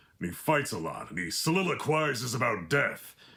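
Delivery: gruff, brooding warrior voice. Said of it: "the guy that talks like this".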